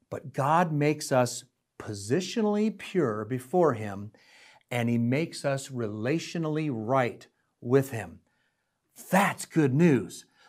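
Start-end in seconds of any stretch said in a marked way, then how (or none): 0.1-8.2 nice and slow, soft. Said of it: "I'm gonna say this nice and slow".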